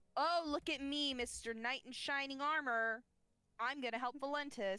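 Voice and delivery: mocking, snide, bratty sibling voice. Throwing on a mask, a character fakes an imitation of Callum. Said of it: "she's gonna fake imitate Callum".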